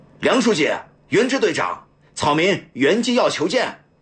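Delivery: high, loud shouting at full voice. Entering a courtyard, a man calls out to officials asking to see them: shouting loudly. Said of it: "大声喊道".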